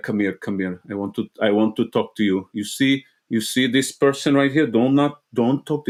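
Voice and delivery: low, thick, intense, heavy tough-guy voice. Imitating his dad when he got mad, low, intense voice. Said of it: "he gets very low".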